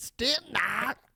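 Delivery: put-on very high, loud yelling in a German accent. Saying a christmas carol's german title aloud, in a yelled german accent. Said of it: "I said it like a German. Don't they yell that shit?".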